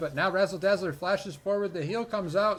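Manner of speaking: loud, high talking through food, chewing, mouth full. Commentator calling the game while eating chicken nuggets, talking with mouth full. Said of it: "my mouth is full of chicken nugget".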